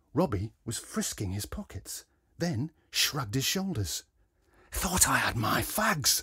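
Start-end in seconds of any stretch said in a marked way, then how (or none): 4.8-6.3 words pushed out in a hiss. Robbie, after frisking his pockets and shrugging, speaks hissed. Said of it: "he hissed".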